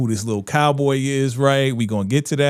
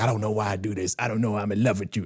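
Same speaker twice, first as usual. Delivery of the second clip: put-on angry tone, lower and quieter; 4 semitones lower, 7 dB quieter than usual. Retelling a show scene where he walks out mad: imitating an angry line. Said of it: "he's mad".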